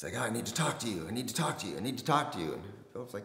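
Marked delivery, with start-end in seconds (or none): 0.2-2.5 very weird, off-kilter, high-pitched voice. Retelling how Mike spoke at the front door: imitating Mike speaking very weird. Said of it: "Mike's speaking very weird".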